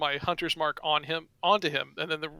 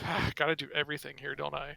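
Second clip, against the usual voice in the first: soft, quick grumbling mutter. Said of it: "I kinda mutter to myself".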